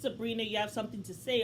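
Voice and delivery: normal talking voice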